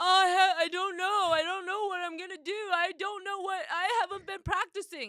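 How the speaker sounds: high, loud, frantic, upset hysterical panic. Retelling a kid who hasn't practiced piano, imitating hysterical Sawyer. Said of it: "he's hysterical 'cause he knows".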